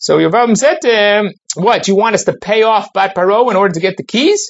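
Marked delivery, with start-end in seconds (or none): 1.6-4.5 acted-out sarcastic tone. Retelling what one figure said to another, retelling a sarcastic remark. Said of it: "It's in a sarcastic manner".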